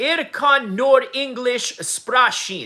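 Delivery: slow speech with a slight Russian accent. Reading chat on stream and saying a German sentence, with a slight Russian accent. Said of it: "I sounded a little Russian there".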